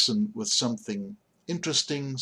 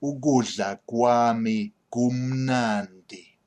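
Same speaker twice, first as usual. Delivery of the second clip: slow, unhurried, deliberate word-by-word pronunciation; 4 dB louder than usual. Teaching pronunciation of a sentence using ugu: slow deliberate pace. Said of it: "if I say it slowly".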